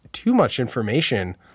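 ordinary talk

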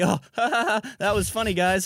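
high, put-on, awkward nervous laughter through words. Describing how it feels after shaking, the speaker acts out nervous laughter. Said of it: "like really nervous laughter".

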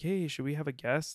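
usual speaking voice

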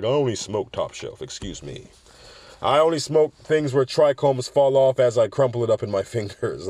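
haughty, snobbish, sneering voice.

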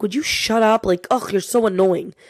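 mock fed-up, irritated, annoyed snapping tone. Speaker retells a friend snapping at his mocking bird after a bad day, imitating annoyed snapping. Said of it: "he would get so annoyed".

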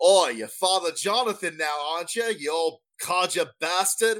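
put-on East London cockney accent. A voice answers the caller playing father jonathan, in a cockney accent. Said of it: "Who's this cockney motherfucker talking to me?".

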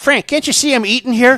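high-pitched, loud, snapping insult-comic voice.

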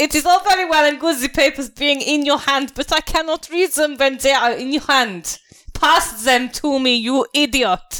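badly faked German accent, very high. Playing a gate guard demanding the papers, bad German accent. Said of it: "I've done my two German accents very badly".

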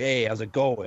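easygoing TV wiseguy mobster-style voice. Retelling how a boss at an old grocery store job talked: imitating a Sopranos-like boss. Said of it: "Kinda like that".

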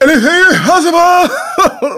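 very high-pitched, hyped, exclaimed put-on voice. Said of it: "It's my KG voice".

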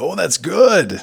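very high, loud character voice. Acting out a line from a mob movie: Al Pacino impression. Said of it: "and then Al Pacino goes".

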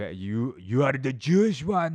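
put-on botched Korean accent. Voicing Koreans accusing each other, in a failed Korean accent. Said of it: "That's not even a Korean accent".

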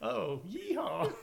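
high, loud cowboy yeehaw holler. Answering that McCree is a cowboy, in a McCree voice. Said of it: "Sounds just like him".

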